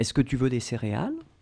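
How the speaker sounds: pitch rising at the end. Speaker demonstrates how to ask a question in French, with rising question intonation. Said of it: "raise a little bit the voice at the end".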